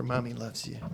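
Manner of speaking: soft half-whisper under the breath. Hugging and healing another character, half-whispering. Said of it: "I'm gonna whisper".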